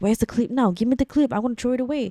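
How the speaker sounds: theatrical, overplayed, fake alarm and panic. Retelling how the husband acted panicked about a clip: imitating husband's fake panic. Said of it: "He did this whole performance".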